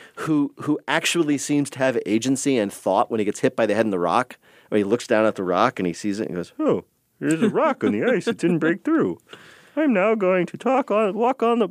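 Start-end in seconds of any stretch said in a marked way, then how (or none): 6.6-11.7 very high, puppet-style voice. Voicing the thoughts of a figure hit by a rock, Muppety dog-thoughts voice. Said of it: "this is the same voice that Mara and I use to imitate our dogs thinking".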